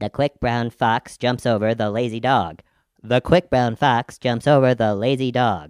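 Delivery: high helium-altered voice. Demonstrating for listeners after taking a deep breath of helium, in a helium voice. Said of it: "take a deep breath of helium".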